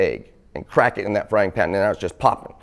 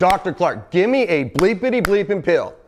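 mock raised voice pushed very high, pleading; 10 semitones higher than usual. Retelling demanding a pill from his doctor, re-enacting raising his voice. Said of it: "So I raise my voice".

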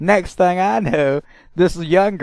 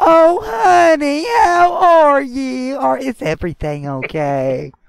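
put-on talking down in high, slow baby talk; 9 semitones higher, 4 dB louder than usual. Retelling how an older woman spoke to him: imitating someone talking to a toddler. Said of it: "you would have thought I was a fucking two-year-old".

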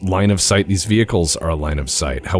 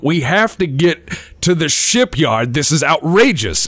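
higher-pitched, loud yelling; 8 semitones higher than usual. Voicing people yelling over crackling flames: yelling. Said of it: "overhear them yelling over the crackling flames".

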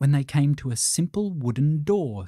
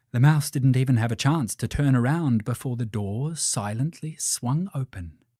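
ordinary delivery, nothing marked

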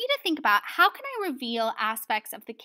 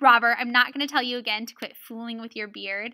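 usual speaking voice

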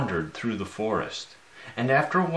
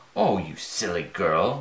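drawn-out, low, slow witch's cackle, taunting; 4 semitones lower than usual. A narrator reads the witch answering the girl, cackling. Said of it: "cackled the witch".

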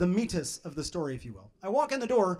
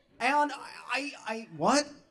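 usual speaking voice

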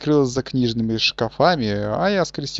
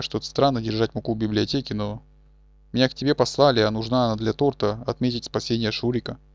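ordinary talk, nothing marked

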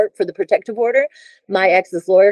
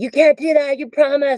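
mock screaming, higher; 7 semitones higher than usual. Speaker recounting how people in the courts pressured the speaker, imitating people screaming. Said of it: "They were screaming at me".

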